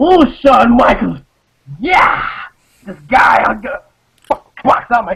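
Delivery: overwrought, over-excited starstruck gush on the verge of tears. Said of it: "never got that fucking excited to talk like".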